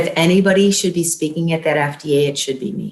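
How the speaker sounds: ordinary talk, nothing marked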